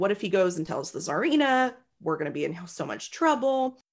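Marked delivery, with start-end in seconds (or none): none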